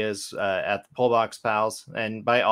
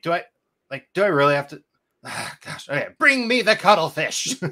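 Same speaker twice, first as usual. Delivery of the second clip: put-on reluctant villain voice, much higher pitch; 7 semitones higher, 4 dB louder than usual. Retelling how he has to shout a villain line, mock-reluctant villain voice. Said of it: "villainous way, but he's also like".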